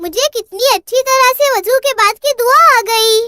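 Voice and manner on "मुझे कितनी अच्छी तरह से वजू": ordinary delivery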